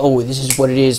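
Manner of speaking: ordinary talk, nothing marked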